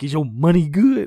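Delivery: flustered nervous blurt. Telling a story about buying phones, acting out a man's nervous blurted question. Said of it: "Fat Ass basically gets all nervous".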